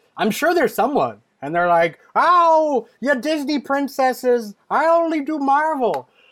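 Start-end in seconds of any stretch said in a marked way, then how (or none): 2.2-6.0 put-on very high, slow, drawn-out whiny old lady voice. Imagining old ladies cosplaying who only do marvel, in an old lady voice. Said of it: "the old ladies out there that are cosplaying".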